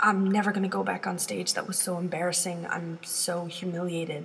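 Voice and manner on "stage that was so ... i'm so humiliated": ordinary talk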